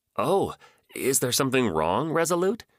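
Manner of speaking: high, sing-song, feigned innocent voice. Narrator reading a character's radio reply, affecting an innocent-sounding voice. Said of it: "Jax affected his most innocent-sounding voice".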